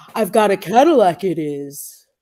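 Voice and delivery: slow, drawn-out creature voice. Doing an impression for another speaker to guess: Bigfoot impression. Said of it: "it's Bigfoot".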